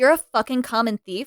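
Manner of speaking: put-on disgusted, contemptuous tone. Retelling how she reacts to the robbers, imitating disgusted contempt. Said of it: "she's so disgusted".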